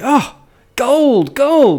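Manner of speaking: put-on young teen's piping voice, very high. Voicing a teenager who grabs a seed that turns to gold: speaking as a teenager. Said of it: "you see some sort of teenager say".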